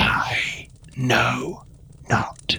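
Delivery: hushed, whispered, breathy undead croak. Voicing a dead creature being questioned, the game master uses a croaking undead voice. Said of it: "It croaks from the kind of depth of its dead lungs".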